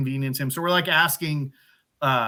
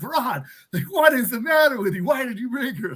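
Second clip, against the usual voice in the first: mock, high-pitched yelling by a group; 9 semitones higher than usual. Retelling how the group yelled at Ron: imitating people yelling. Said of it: "We're all yelling at Ron".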